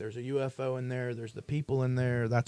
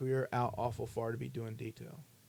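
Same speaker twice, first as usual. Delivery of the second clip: put-on stern voice, quieter; 4 dB quieter than usual. Retelling how a man stopped them near the base: imitating someone stern. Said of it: "he was very stern".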